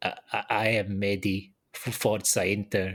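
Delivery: weird, choked, slow, nervous voice with stammering. Retelling a club announcement video, imitating Taremi's choked nervous voice. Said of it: "he says in this weird, choked, nervous voice".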